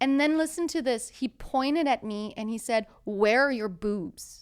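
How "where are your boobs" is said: mock loud delivery, louder. Retelling what a boy pointed and said, imitating him saying it loudly. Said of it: "He said it really loud".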